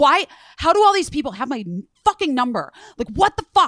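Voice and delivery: acted angry screaming. Retelling a phone call where a man kept screaming: imitating someone screaming angrily. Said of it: "screaming at me".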